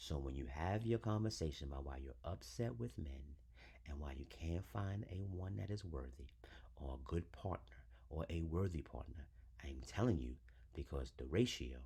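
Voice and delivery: softly spoken, each word separate.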